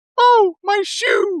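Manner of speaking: man's very high-pitched princess voice. Retelling a movie line a man dubbed for a woman, in a Princess Peach voice. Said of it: "a man doing like a Princess Peach voice".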